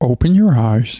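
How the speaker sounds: put-on calm, soothing meditation-guide voice. Doing an impression for the other speaker: Sam Harris voice. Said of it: "I'll do Sam Harris".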